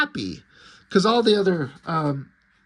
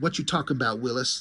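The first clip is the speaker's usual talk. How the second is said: ordinary talk, nothing marked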